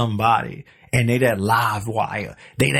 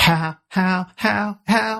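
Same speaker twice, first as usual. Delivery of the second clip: put-on bird-like voice, much higher; 9 semitones higher than usual. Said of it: "ever bird like voice".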